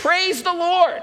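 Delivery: play-acted, very high, called-out shout. Telling a story of an elderly lady on her front porch; imitating an elderly lady shouting. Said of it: "She would stand on her front porch and shout".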